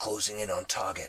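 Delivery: low, a little throaty, guttural male voice. A voice heard on one of two channels in use, a slightly guttural male voice. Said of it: "A male voice, slightly guttural".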